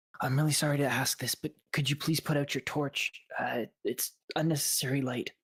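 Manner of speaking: secretive, voiced stage half-whisper. A game master voices a man who comes up to a player: half-whispering. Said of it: "he whispers".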